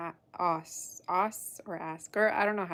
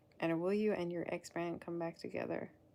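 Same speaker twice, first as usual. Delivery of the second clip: plain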